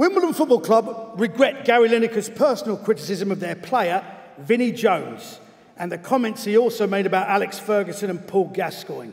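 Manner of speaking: slight cockney accent, light edge.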